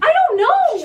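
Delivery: shrill, very loud, high-pitched, full-volume yelling. In a fight, answering why they are still there, yelling. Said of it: "Will you stop yelling?".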